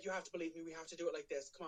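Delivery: mock, fast, manic pleading tone. Speaker retelling how a woman urged the group holding hands, mock-manic pleading. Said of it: "like it's it's very manic".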